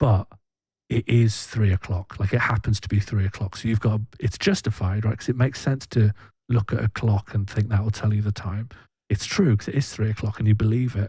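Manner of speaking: whispered speech. Quickly explaining an example they could get in trouble for: whispering. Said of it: "I'm gonna whisper it".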